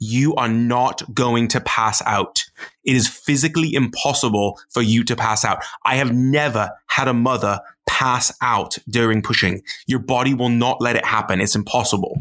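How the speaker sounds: put-on British accent. Retelling what the midwife said during labor: imitating a british accent. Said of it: "laughing at Jordan's accent".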